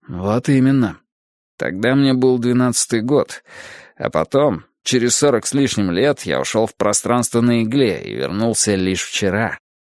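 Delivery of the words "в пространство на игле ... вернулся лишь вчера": plain reading voice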